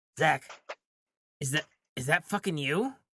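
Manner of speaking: hushed whisper. Imagining looking up at a friend who grew much taller, whispering. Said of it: "I'm going to whisper".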